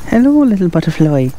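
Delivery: put-on speaking in an Irish accent. Out alone with a camera and drone, talking to a butterfly in an irish accent. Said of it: "I don't know why I talk in an Irish accent".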